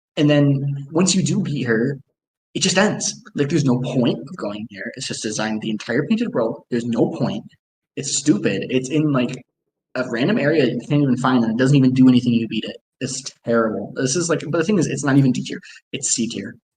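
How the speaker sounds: normal talking voice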